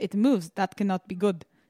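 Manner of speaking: put-on Israeli-accented speech. Retelling a man finding a moving bump on his forehead, Israeli accent. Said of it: "in his Israeli accent".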